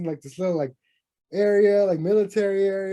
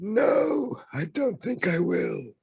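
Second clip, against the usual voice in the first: put-on very old man's voice; 3 dB quieter than usual. Discussing a game conference, aiming for the aged hero: old Captain America impression. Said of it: "I was trying to go for Captain America at the end of Endgame when he's all old".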